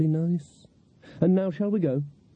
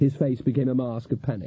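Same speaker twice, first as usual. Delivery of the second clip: plain reading voice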